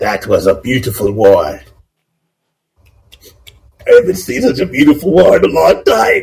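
high-pitched, swooping royal kobold king voice. Game master voicing the kobold king applauding a fight, kobold king voice. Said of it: "the king stands up and just starts clapping".

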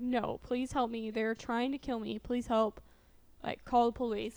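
plain

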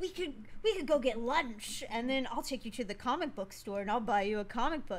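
fatherly, coaxing, persuading dad voice. Retelling what he said to the speaker, in a dad voice. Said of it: "you just used the dad voice".

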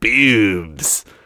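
put-on deep trailer-narrator announcer voice. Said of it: "The way that guy says boobs in his deep voice".

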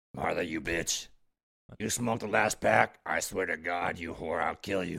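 deep, very low, rasping put-on voice. Hosts talk about voices getting low and raspy; one demonstrates, low raspy voice.

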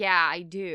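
put-on let-down, unhappy, disappointed tone. Retelling someone's reply as he looks at a poster: imitating a disappointed voice. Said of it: "in a very kind of disappointed sounding, like, voice".

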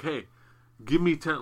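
forceful, insistent, pushy, demanding tone. Retelling a convention guest demanding money from fans: imitating Vincent demanding forcefully. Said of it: "like, forcefully".

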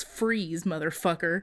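plain

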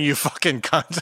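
usual speaking voice

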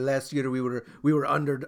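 bad, awful, slow put-on Italian accent. Retelling what a goalkeeper said about last year, in an awful italian accent. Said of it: "That's an awful accent".

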